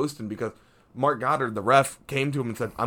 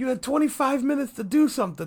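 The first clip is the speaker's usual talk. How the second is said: imitated scream, pitched higher; 13 semitones higher than usual. Retelling what a coach yelled at a fighter: imitating a coach screaming. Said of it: "Covington's coach was screaming at Masvidal".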